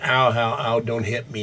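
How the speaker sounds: normal talking voice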